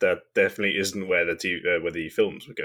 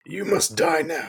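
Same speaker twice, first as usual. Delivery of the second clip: attempted dark brooding hero voice landing very high; 9 semitones higher than usual. Joking that Batman might be behind them, doing a bad Batman impression. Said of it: "that was a terrible Batman".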